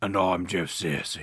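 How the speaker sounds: put-on, mock-angry British man's voice. Introducing a christmas horror movie podcast, a co-host says his name in an angry british man voice. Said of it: "when did you become an angry British man?".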